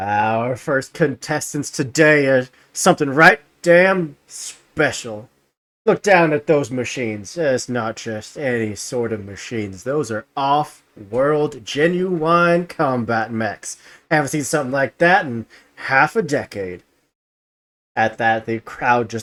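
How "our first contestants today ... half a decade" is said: arena announcer voice, hyping, showman proclamation. Storyteller voicing an announcer over a cheering, screaming crowd, booming announcer voice. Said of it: "the announcer's voice booms out".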